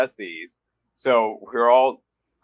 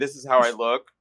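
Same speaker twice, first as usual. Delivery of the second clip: usual speaking voice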